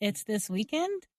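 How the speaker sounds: ending on a rising pitch. Demonstrating restating something to check what you heard, with rising intonation at the end. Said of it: "raising your voice at the end of a sentence".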